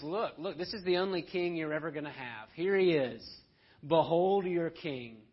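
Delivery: derisive, mocking, taunting jeer. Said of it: "Mocking Jesus".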